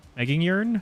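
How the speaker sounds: high, rising questioning tune.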